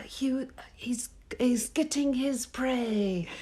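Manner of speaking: fake British narrator-style accent. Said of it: "Is that close?".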